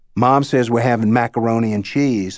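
ordinary delivery

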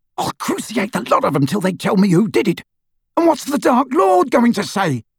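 shrill, furious, fearful shriek. Standing over his sister on the floor, a man is shrieking. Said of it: "He shrieked".

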